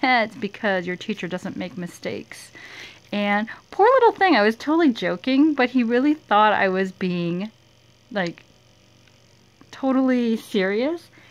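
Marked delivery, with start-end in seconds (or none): none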